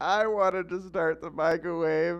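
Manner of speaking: put-on shrill, very high, loud sobbing child's tantrum. Retelling what a kid said as he came in crying, imitating a crying fit. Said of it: "comes in crying and throwing a fit".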